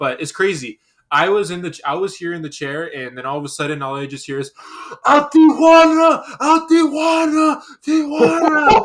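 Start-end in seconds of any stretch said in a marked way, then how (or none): 5.0-8.9 very loud, very high, slow, drawn-out shrill scream. Retelling hearing a fan nearby during a match: imitating someone screaming. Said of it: "were you screaming, like, like, Tijuana".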